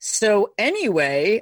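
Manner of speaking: put-on theatrical performing voice. Imitating a performer starting a read: put-on actor voice. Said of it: "and then your voice goes".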